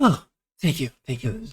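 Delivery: deeply relieved, grateful tone. A character gets the slide whistle back and thanks the two, very relieved. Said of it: "very, very relieved to have it back".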